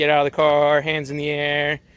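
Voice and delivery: plain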